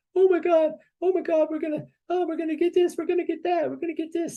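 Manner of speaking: mock crying, very high, blubbering sob-talk. Retelling a man crying on a bench on a ship, imitating someone crying. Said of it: "one of them is crying".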